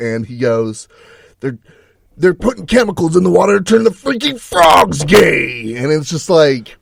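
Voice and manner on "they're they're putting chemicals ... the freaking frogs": put-on ranting, screaming voice, pitched higher. Retelling a memorable clip of Alex Jones: imitating Alex Jones ranting and screaming. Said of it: "he's ranting and screaming, like, per Alex Jones".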